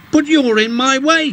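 very high, indignant, objecting cry. Narrating a story, voicing a character in an argument, protesting. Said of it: "protested Ben".

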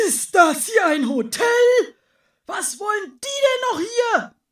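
very high, very loud, shrill, horrified snorting outburst. Narrator reading the ox's line in a christmas story, snorting in horror. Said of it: "schnaubt der Ochse entsetzt durch die Nase".

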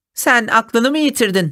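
high, derisive, scoffing, mocking tone. A narrator voices the hare answering the tortoise's challenge to a race, mocking. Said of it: "dedi alayla".

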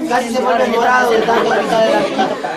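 normal talking voice

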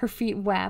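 ordinary delivery

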